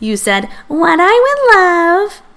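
very high voice through giggles. Peter, giggling, repeats the narrator's earlier words back: giggly high-pitched imitation. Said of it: "imitating me in a high-pitched voice".

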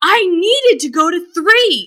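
mock furious, accusing yell. Retelling a woman at the elevator yelling at the speaker, imitating her yelling. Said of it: "And she's yelling at me".

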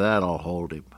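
muttered aside under breath. Retelling what a hungover announcer said with his microphone still on: imitating a mutter under his breath. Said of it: "he said under his breath".

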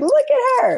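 very high-pitched, adoring, admiring voice.

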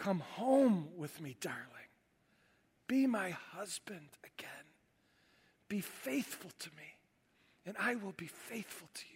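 barely audible, very soft, hushed whisper. Retelling how Hosea takes his wife home: imitating a whisper. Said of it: "and whispers".

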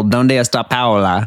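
Spanish spoken with Italian vowel sounds. Giving an example of a man who speaks Spanish like an Italian: Spanish with Italian vowels. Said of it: "Italian vowels in there".

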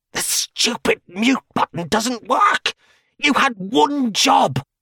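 very high hiss, turned away from the mic. A voice over a mic whose mute button fails, hissing off mic. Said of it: "could be heard hissing off mic".

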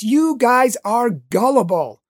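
loud, drawn-out yell at full voice. Retelling bursting through a door to address a group, re-enacting a loud yell. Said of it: "I yelled out in a loud voice".

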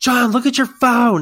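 shrill, high, full-volume yelling shout. Retelling how a man in a loud store yelled at john again; retelling a yell. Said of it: "then he yells at me again".

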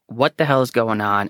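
normal talking voice

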